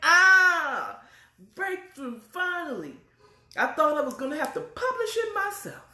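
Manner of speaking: put-on very high ecstatic scream, stretched "ah". Retelling how she announces that someone is interested in her book, retelling a scream. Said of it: "When she's screaming".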